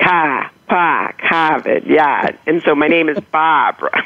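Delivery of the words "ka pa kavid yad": slow Boston accent with every R dropped. Showing how words sound without R's: dropped R's, Boston accent. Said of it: "I pronounce them like A H".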